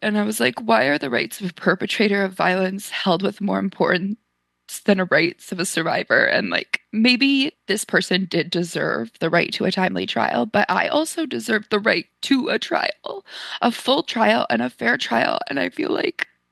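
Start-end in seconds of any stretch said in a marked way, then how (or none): none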